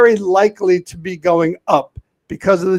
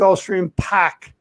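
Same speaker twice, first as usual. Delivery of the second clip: put-on Boston accent; 4 dB quieter than usual. Giving a race pick, done for Boston guy Sean: put-on Boston accent. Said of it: "the reason I did a Boston accent".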